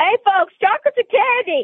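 loud yelled delivery.

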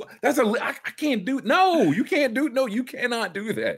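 very high, stumbling protest, tripping over words. Retelling a player's reaction after getting flagged: imitating Draymond protesting a flag. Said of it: "And then he gets flagged. He's like".

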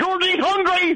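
put-on impression, shouted high.

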